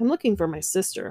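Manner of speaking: ordinary delivery, nothing marked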